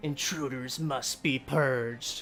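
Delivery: loud bellow with a snarl. Game master voicing a creature that turns to bellow at the player: low, snarling bellow. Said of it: "in a low, snarling voice, um, it bellows at you".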